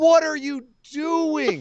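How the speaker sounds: slow, drawn-out, exasperated disbelief. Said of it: "And I go".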